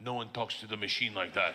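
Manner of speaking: heavy Russian mobster voice. Retelling what Big Igor said at the door: imitating Big Igor. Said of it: "and goes".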